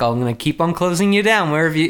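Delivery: ordinary delivery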